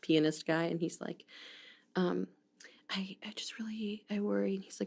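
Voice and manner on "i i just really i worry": whisper, higher and quieter. Retelling a scene from Waiting for Guffman, imitating a whisper. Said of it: "Why are you whispering?".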